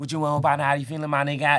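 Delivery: put-on very loud, rapid-fire Atlanta country accent. Imitating how people from Atlanta country talk: fast Atlanta country accent. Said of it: "they talk mad fast".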